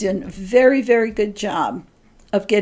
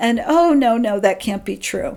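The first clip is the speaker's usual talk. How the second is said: high-pitched, flustered, dismissive tone. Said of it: "rationalize that little voice away and go".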